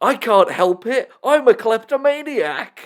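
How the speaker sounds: put-on, high, delighted, gleeful, gloating shout. Speaker recounts an episode moment after Mr. Krabs yells, retelling a gleeful yell as Plankton. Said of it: "Plankton gleefully yells".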